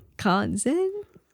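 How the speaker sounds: acted confused, unsure, searching tone. Retelling how a guest tried to understand the question: imitating a confused question. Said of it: "trying to understand what was being asked".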